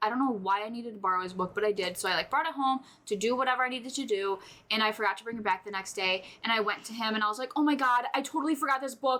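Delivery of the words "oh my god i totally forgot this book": put-on frantic, panicked, tearful, sobbing blurt. Recounting forgetting to return a teacher's book, the speaker acts out their panicked sobbing. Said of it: "having a panic attack and I'm fucking sobbing".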